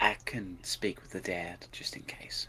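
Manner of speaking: whispered aside. Speaking in character to Miette, telling her a secret: whispering. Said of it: "I'm just gonna whisper to Miette".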